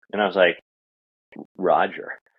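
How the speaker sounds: ordinary talk, nothing marked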